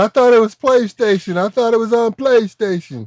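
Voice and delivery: mock screaming. Retelling what someone started saying: imitating someone screaming. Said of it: "and then he starts screaming".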